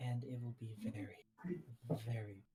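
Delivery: low, quiet half-whisper under the breath. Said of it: "I whisper that quietly".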